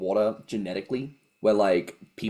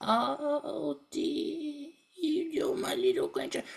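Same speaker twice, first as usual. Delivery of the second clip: put-on granny voice, very high, very slow; 5 dB quieter than usual. Mocking the stereotype of how a nana talks; stereotypical nana voice. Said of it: "Nana who would speak like".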